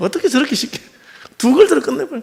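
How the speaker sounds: high, rising amazed exclamation.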